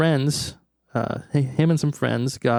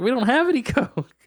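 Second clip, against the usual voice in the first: high-pitched screaming; 12 semitones higher than usual. Retelling a break-in story, quoting the maid screaming back: retelling a maid's scream. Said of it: "screams back".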